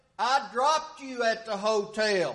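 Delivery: mimicked shouting. Retelling a phone call about a stolen car, retelling a shout. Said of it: "he shouted".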